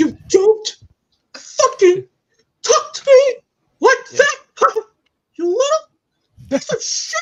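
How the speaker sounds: shrill, very high, loud cartoon mouse voice. Trying out impressions, the speaker does the South Park Mickey Mouse voice. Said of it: "Can I still do the South Park Mickey Mouse?".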